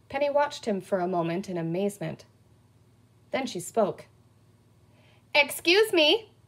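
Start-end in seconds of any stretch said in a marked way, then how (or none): 5.3-6.2 pointed, confrontational, challenging voice, pitched up. Penny addresses the sheriff as he slowly reads a comic; challenging voice. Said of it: "in a challenging voice".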